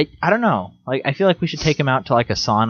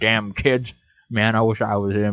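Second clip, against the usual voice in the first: usual speaking voice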